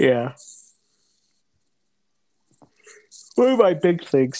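talking through a yawn. Describing how often they went outside, the speaker talks while yawning. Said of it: "sorry, I was yawning".

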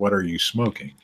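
ordinary talk

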